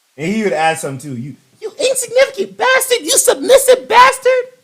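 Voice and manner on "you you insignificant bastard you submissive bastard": very high, mocking, teasing voice. Retelling a gaming friend's favorite word, imitating a friend's high-pitched voice. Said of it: "we make fun of his high-pitched voice while he said it".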